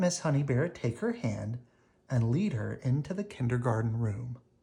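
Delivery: ordinary delivery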